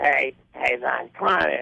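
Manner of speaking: gravelly, creaky tone. Retelling how the boss greeted him: imitating the boss's voice. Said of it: "he had that voice like".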